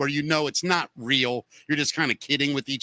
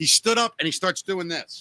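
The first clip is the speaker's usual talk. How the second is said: ordinary talk, nothing marked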